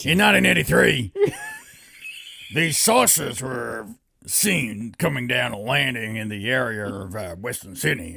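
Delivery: strained put-on voice, pushed hard. Speaker attempts telling a story in Alex Jones's voice, Alex Jones impression. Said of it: "See if I can do it in uh, Alex Jones's voice for the whole thing".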